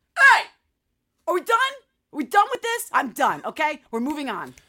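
very loud, swooping angry dad voice. Describing how they act like a dad, imitating an angry dad. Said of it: "like an angry dad".

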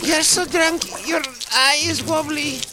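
put-on squeaky Russian accent, girl voice. Retelling what a girl said about peeing: imitating a squeaky russian girl. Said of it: "hilarious little squeaky Russian girl".

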